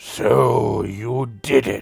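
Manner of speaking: very deep, murky, watery, creaky rumbling voice. A figure sitting cross-legged on the floor, staring at everyone, speaks in a very deep, watery voice. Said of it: "in a voice very deep and almost sounds watery".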